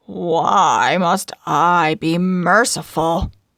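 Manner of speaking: harsh, grudging, contemptuous snarl, loud and slow. Narrator reading a moneylender's scornful, outraged questions when urged to show mercy, in a harsh snarling, grudging voice. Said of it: "The Duke of [name] sat in the judge's chair, / he snarled. / [name] hissed. / He agrees that if he doesn't repay [name] the moneylender, [name] can take a pound of his flesh".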